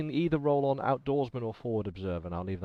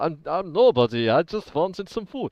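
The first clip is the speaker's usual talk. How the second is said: very loud, fake, badly done German accent; 6 semitones higher, 9 dB louder than usual. Confronted by another speaker, answering in character with a bad german accent. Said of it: "all in German accent".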